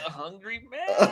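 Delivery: high, moaned answer. Retelling the other speaker's answer, imitating a Jeopardy contestant moaning an answer. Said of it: "They're like".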